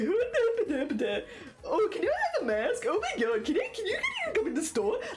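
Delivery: very high, shrill, swooping, sing-song stupid mocking voice. Retelling how people outside the store mimicked the speaker, imitating a high mimicky voice. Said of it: "in like a high pitched mimicky voice".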